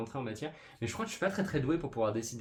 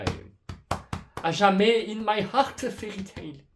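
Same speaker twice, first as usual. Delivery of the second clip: put-on German accent, much higher, louder, slower; 9 semitones higher, 8 dB louder than usual. A video-maker praising the manga that got them into manga, put-on German accent. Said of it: "j'ai pris un accent allemand comme ça".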